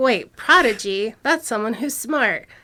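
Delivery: normal talking voice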